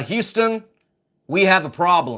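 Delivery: affected, put-on American accent. Reading out a film quote for a quiz: putting on an accent. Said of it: "I like the accent there".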